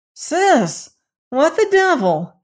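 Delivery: very high, slow, horrified, aghast cry. A brother sees his sister stagger in through the door; crying out, aghast. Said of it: "he cried, aghast at sight of her".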